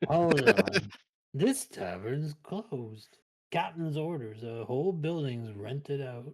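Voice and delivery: put-on slow, drunken, tipsy sailor voice. The game master voices a drunk navy man guarding the closed tavern: drunk navy sailor voice. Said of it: "Hey, I'm a Navy man. / He gets up and does like a drunken salute to you".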